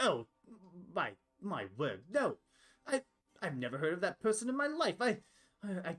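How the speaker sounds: stammering, panicked voice with rising pitch. Voicing a character asked about a gang: panicked in character. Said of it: "starts looking, like, panicked".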